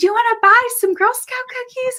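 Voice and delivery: high-pitched yelling. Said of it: "she just yells".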